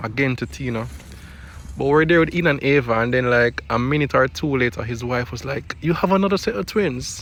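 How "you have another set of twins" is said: best-attempt put-on British accent, pitched up. Retelling what an acquaintance's wife asked, in a put-on british accent. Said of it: "That's my best British accent, by the way".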